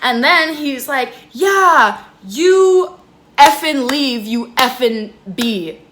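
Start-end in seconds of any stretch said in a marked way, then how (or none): 1.3-5.7 put-on very slowly dragged-out, drawn-out shouting. Retelling a man telling her to leave, imitating someone yelling. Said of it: "hear this guy yelling at me".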